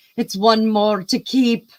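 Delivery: put-on high, slow, loud Scottish accent drifting toward Irish. Retelling a former sister-in-law's remark about the royal wedding: imitating Tracy's Scottish accent. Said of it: "So she sounded more Irish".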